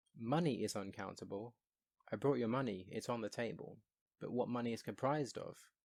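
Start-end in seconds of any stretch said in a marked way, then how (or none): none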